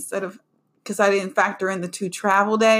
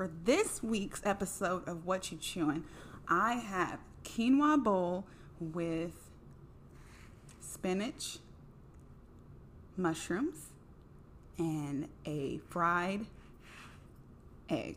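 slow, drawn-out, barely voiced whisper; 17 dB quieter than usual. Host of a food segment describing this week's meal, speaking slowly. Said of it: "Why am I speaking so slowly?".

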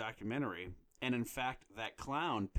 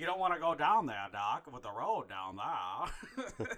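put-on heavy Maine accent, laid on; 4 semitones higher, 4 dB louder than usual. Talking about a favorite movie character, quoting Judd in a heavy Maine accent. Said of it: "The heavy main accent".

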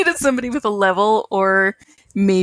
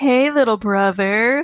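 mock unsettling, creepy voice; 2 semitones higher than usual. Retelling how a character greets his brother: imitating a creepy greeting. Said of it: "he does this creepy, like".

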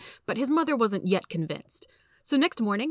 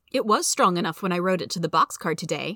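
plain reading voice

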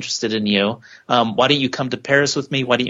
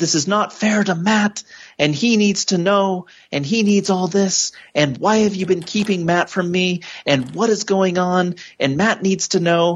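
mock yelling at top volume, higher pitch; 7 semitones higher than usual. Doing an impression of a scene, the speaker is mock yelling at top volume. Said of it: "just yelling at top volume".

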